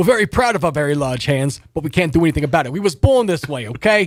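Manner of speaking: put-on New York area accent, Jersey style. Speaking as a scorpion-like creature about its large hands: Jersey Long Island accent. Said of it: "they got that Jersey, Long Island accent".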